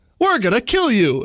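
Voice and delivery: eerie, creepy, high otherworldly alien voice. Retelling a dream voice that spoke to the dreamer, in a creepy alien voice. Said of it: "it says in its creepy alien voice".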